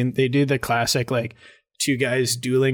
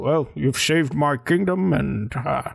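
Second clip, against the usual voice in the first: half-hearted, put-on Scottish accent, kingly tone; 2 semitones higher than usual. Retelling the king's line at the wedding: Sean Connery impression. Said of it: "I'm not even doing Connery".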